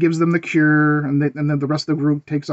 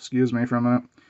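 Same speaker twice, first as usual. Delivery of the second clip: put-on bored voice, lower and quieter; 4 semitones lower, 6 dB quieter than usual. Retelling a movie scene where Neville ignores an attack: imitating Neville sounding bored. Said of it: "bored with it".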